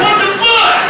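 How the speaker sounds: shocked outburst, high and loud.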